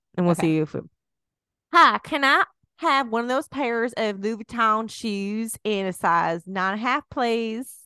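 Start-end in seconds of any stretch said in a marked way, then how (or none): 1.7-7.7 deliberately put-on Texas accent, pitched high. Testing how Louboutin sounds, asking for shoes in a put-on Texas accent. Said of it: "I'm going to say it in a Texas accent".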